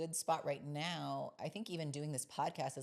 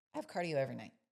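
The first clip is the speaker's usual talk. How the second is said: put-on curt, snappy delivery. Retelling a reply to a question about cardio: imitating own snappy tone. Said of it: "So that was my tone".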